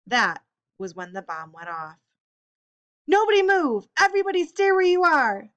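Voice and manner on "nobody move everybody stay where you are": very high, loud shout. A man rushes into the crackling kitchen after a bomb goes off, shouting. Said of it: "Who shouted as he rushed".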